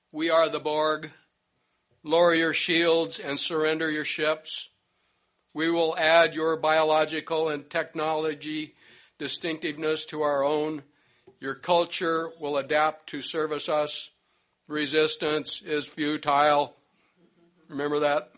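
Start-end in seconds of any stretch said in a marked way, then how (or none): 0.2-16.8 cold, emotionless machine voice, lower in pitch. Recalling the Borg's first message to the Enterprise, in a cold mechanical Borg voice. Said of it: "the cold mechanical voice said".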